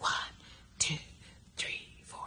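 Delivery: hushed, soft whispering tone. Showing listeners how to whisper the counts: whispering the counts. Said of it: "have a whispering tone like this".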